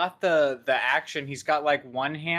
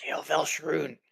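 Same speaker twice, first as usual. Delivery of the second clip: whispered, much quieter; 3 dB quieter than usual. Joining a secret exchange between master and minion, whispering. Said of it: "what are you guys whispering about?".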